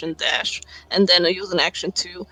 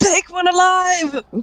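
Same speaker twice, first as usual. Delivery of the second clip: high, slow bellowing shout. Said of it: "I'm gonna shout out".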